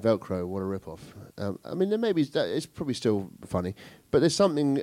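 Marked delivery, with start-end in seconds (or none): 0.0-1.0 very flat deadpan delivery, quieter. Speaker demonstrates how a joke would sound told very deadpan. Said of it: "If I were to do that very deadpan".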